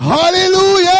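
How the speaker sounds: high, loud shouted hallelujah.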